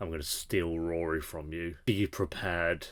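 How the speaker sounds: very soft, very quiet, hushed stage whisper. Retelling what she half-whispered into Lorelai: imitating a half-whisper. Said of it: "she just whispered into Lorelai, like".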